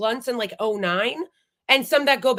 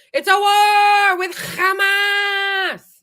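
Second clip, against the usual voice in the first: mock drawn-out scream, very high and slow; 9 semitones higher, 6 dB louder than usual. Mocking a guest who kept screaming: imitating someone screaming. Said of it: "You don't need to keep screaming".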